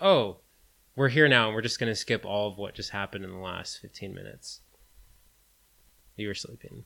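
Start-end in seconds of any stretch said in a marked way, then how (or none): none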